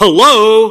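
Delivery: high, loud, excited outburst. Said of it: "Sorry, I'm getting excited".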